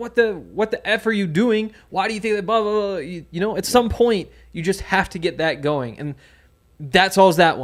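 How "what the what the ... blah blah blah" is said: acting out a scream, higher. Acting out a coach confronting a blocking player: imitating someone screaming. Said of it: "just start screaming at him".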